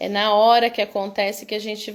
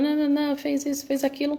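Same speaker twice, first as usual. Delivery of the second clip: put-on high-pitched parental scolding voice; 5 semitones higher, 4 dB quieter than usual. Acting out a parent scolding a child mid-argument: imitating a parent scolding. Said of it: "A gente tá lá dando uma bronca, brigando".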